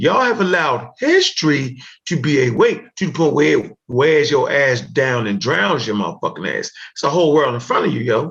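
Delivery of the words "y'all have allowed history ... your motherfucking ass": very slow, deliberate, word by word, spelled out. Speaker repeats his point to the others, saying it real slow. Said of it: "I'm gonna say this real slow".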